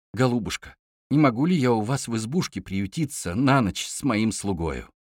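ordinary delivery, nothing marked

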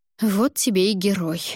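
plain reading voice

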